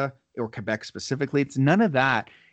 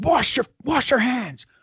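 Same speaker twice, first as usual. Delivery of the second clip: mock woman's scream, much higher; 10 semitones higher, 4 dB louder than usual. Retelling how a McDonald's worker screamed at them, imitating her screaming. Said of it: "And she's screaming".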